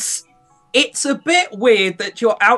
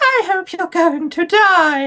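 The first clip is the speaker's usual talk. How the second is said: sweet, cutesy character voice, much higher and slower; 9 semitones higher than usual. Demonstrating a game character's voice before using it, cutesy game-character voice. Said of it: "she has a really cutesy voice".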